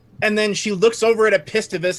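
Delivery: normal talking voice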